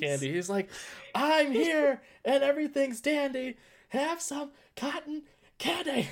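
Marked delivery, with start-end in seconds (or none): 1.1-6.1 up-close, very high, shrill, very slow scream. Retelling an anime scene where a character screams a line: imitating a character screaming. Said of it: "gets really close and just screams".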